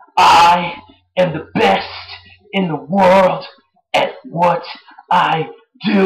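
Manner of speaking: play-acted angry, slow, deliberate words. Recapping a wrestling match, quoting Chris Jericho: imitating Chris Jericho angry. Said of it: "He was all being Jericho angry".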